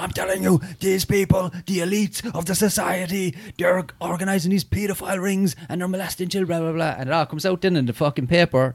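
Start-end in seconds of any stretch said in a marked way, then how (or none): 0.0-7.0 animated, high, roaring, bellowing, screaming rant. Imitating a conspiracy talker's rant: imitating roaring, screaming ranting. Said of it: "he's roaring and screaming".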